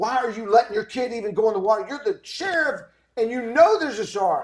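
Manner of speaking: put-on angry, loud yelling. Retelling yelling at the sheriff while watching Jaws: retelling own angry yelling.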